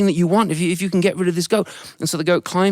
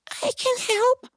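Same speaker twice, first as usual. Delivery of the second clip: put-on teeny, very high little voice; 4 dB quieter than usual. Storyteller voicing the ant offering help: tiny little ant voice. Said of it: "this tiny little voice that said".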